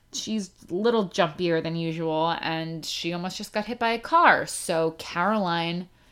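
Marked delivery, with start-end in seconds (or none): none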